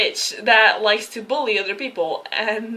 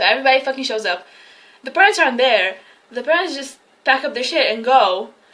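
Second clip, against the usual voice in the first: ordinary talk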